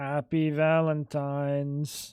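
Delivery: deadpan, very low, flat, unenthusiastic monotone. Imitating how his wife said it to him: mock flat, unenthusiastic. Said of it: "The amount of like lack of en- enthusiasm".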